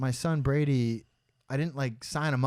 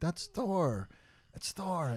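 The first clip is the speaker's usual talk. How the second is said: soft, pitched-up mumbling of many voices; 5 semitones higher, 6 dB quieter than usual. Retelling a comic convention host's mix-up, imitating the crowd mumbling. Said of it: "the crowd starts kind of mumbling like".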